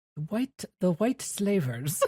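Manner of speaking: put-on English spoken with a Belgian accent. Quoting a funny scene from the show: David Suchet's Belgian accent as Poirot. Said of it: "David Suchet gets to say in his Belgian accent".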